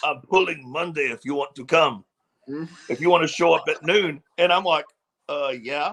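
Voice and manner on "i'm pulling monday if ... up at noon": put-on Bulgarian accent. Retelling an invitation made over a Saturday lunch, in Dementor's Bulgarian accent. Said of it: "in his Bulgarian accent".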